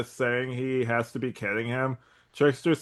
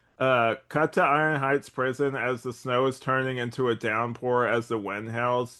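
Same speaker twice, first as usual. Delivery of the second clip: plain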